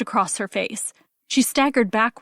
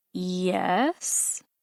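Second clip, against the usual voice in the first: wary, suspicious, long, drawn-out yes; 3 semitones lower, 7 dB quieter than usual. Reading a story aloud, the mother answering a stranger: drawn-out suspicious yes. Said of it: "A long, drawn-out, suspicious yes".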